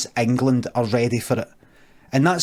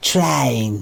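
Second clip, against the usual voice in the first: put-on non-Scottish accent on the word "train". Showing how others probably say train: imitating a non-scottish accent saying train. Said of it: "You probably say something like train".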